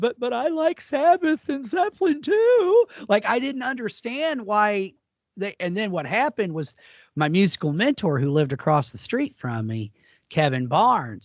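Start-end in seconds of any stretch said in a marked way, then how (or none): 0.0-2.9 put-on tearful, high-pitched crying protest. Recalling being smacked and picked on, he replays his reply: imitating himself crying. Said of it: "and I'm literally crying".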